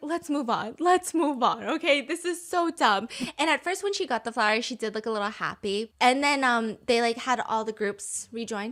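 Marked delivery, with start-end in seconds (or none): 0.0-3.1 acted-out pleading, imploring, begging delivery. Retelling how viewers react to a confession scene: imitating people begging. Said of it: "people are just begging".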